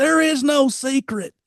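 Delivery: put-on very high, loudest possible all-out bellow. Retelling a man's answer, said as loud as he could: retelling a loud shout. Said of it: "in as loud as he could possibly say".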